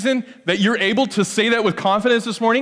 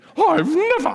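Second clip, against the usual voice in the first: put-on very high, offended old British lady voice; 10 semitones higher than usual. Showing what people say when offended, in an old British lady voice. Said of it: "That's an old British lady's sound".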